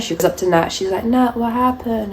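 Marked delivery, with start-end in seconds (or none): 1.0-2.1 sugary, sweet, small, pitched-up high voice. Retelling a story, the speaker imitates a girl checking on her friend, imitating a little sweet voice. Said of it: "With her little sweet voice".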